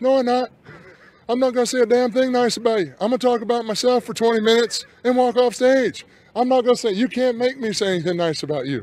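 put-on high-pitched southern voice. Retelling what a friend said about giving a Hall of Fame speech: imitating Arn Anderson's high-pitched Southern voice. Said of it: "in his high-pitched Southern voice".

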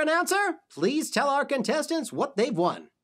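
usual speaking voice

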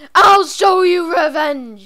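furious, loud, slow yelling.

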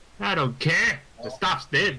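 put-on poor Scottish accent. A character answers a staff member who refuses to serve beer, bootleg Swedish-sounding Scottish accent. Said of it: "incredibly Swedish-sounding Scottish accent".

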